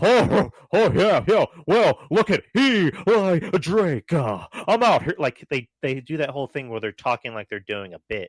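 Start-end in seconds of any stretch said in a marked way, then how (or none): 0.0-5.2 high, loud, over-the-top wrestling promo voice. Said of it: "that voice of like".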